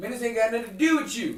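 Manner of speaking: put-on thick Baltimore accent.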